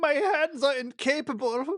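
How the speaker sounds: put-on German accent, very high and loud. Voicing a character in a story, speaking in a German accent. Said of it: "I don't know why I'm doing a German accent".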